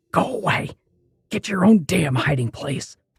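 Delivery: pleading, hissing whisper. Reading a story where a hiding man tells the narrator off: pleading hissing whisper. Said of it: "pleaded in a hissing whisper".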